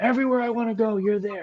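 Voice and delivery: put-on very high, shrill screeching yell. Retelling how another tournament player started screaming at them again, imitating someone screaming. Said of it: "He starts screaming at me again".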